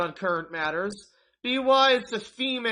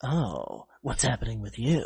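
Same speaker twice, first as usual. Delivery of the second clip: very low, gruff, cool voice; 10 semitones lower, 3 dB quieter than usual. Recalling how he once tried to act around women, gruff, cool Solid Snake voice. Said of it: "kind of gruff and cool".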